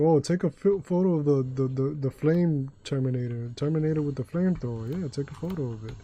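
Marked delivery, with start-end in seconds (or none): none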